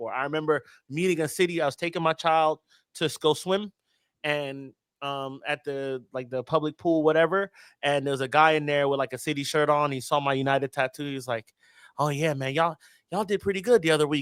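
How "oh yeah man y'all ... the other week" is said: condescending, superior, patronizing tone. Retelling what a rival fan said to him: imitating a condescending tone. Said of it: "They talk to you, like, condescendingly".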